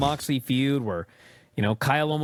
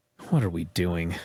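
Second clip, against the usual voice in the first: calm, plain-spoken, understated, matter-of-fact tone; 8 semitones lower than usual. Retelling a commentator's reaction to a wild match: imitating Bryan Danielson saying quietly. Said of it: "just quietly say".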